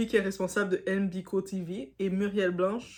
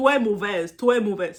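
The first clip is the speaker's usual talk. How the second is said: loud fake Cameroonian accent sliding into Mexican accent; 9 dB louder than usual. Trying a Cameroonian accent that slips into Mexican: failed Cameroonian accent, sounds Mexican. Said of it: "Ça, c'est mexicain".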